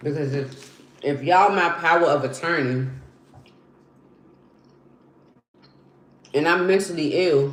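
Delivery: talking with mouth full. Demanding answers from the people holding power of attorney, talking with mouth full. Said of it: "I'm I'm eating gummy bears".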